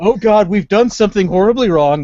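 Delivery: put-on screaming in pain. Retelling stepping out of a hospital bed in pain: retelling own screaming. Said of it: "start screaming like a little girl and saying".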